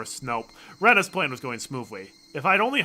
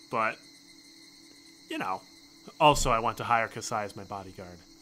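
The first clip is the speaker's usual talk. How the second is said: ordinary delivery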